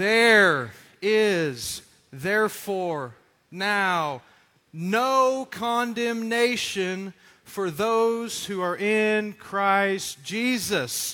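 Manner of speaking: very slow, drawn-out reading in unison.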